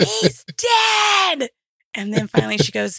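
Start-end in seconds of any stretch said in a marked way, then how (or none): 0.0-1.5 very high screaming, last word stretched out. Retelling how the grandmother started screaming at the news, retelling a scream. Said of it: "just screaming".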